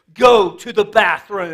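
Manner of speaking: booming, very loud voice. Retelling what their dad said to them as a kid, imitating dad's booming voice. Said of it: "in that booming voice".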